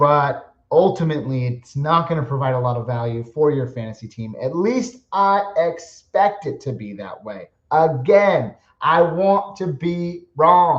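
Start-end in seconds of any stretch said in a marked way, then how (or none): 7.7-10.8 slight British accent, very slow and drawn out. Fantasy football podcaster giving his take on a player, in a slight British accent. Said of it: "I developed just a little bit of a British accent there".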